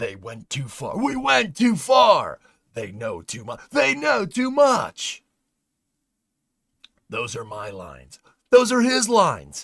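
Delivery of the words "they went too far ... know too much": very high, put-on announcer voice. Perform these lines as a bit, in an announcer voice. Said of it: "E J announcer voice".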